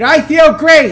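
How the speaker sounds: loud, slow, forceful, belted out with conviction. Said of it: "say this like you mean it".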